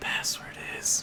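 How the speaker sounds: soft voiceless whisper.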